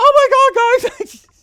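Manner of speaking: put-on shrill, loud, shrieked girly voice, my stretched out. Gamer shows the voice used for Gloria in playthroughs: Gloria voice going bonkers. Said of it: "How to do a generic girl voice".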